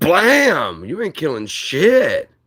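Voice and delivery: very slow, loud, swooping, tough, "blam" stretched out. Retelling shooting an intruder who came through the window: imitating own past retort to attacker. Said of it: "And I was like".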